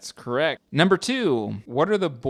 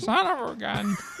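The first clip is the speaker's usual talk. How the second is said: put-on very high old prospector voice; 12 semitones higher than usual. Urged by the others to do the voice, the speaker obliges: old prospector voice. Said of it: "old prospector".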